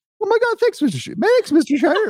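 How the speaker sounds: flustered gushing voice.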